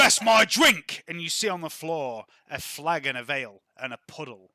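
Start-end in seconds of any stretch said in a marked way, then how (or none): 0.0-1.0 angry character voice, higher and louder. Voicing a bar patron who was shouldered hard: voicing an angry bar patron. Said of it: "one of them shoulders Derek Lee's incredibly hard and turns and goes".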